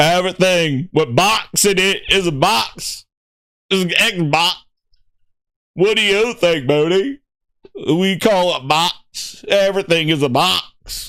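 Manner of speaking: earnest, heroic movie-character voice. Riffing a skit about a brand, doing a Forrest Gump impression. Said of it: "Have a whole goddamn Forrest Gump episode".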